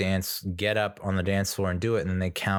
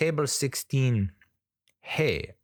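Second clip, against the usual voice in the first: put-on Mexican accent, pitched up; 5 semitones higher than usual. Retelling how the quiz co-host read out the table: imitating a Mexican co-host. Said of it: "co-host who reads off the answers is ... Mexican".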